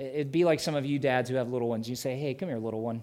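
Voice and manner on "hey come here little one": mock gentle, soft, fatherly tenderness. Showing how dads call their little ones: said with tenderness. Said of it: "you just say it with such tenderness".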